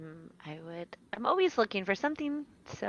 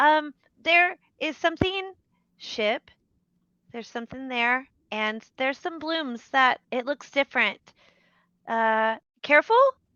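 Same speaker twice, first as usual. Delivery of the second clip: very loud, high-pitched call; 6 semitones higher, 9 dB louder than usual. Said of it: "a louder voice comes out of her".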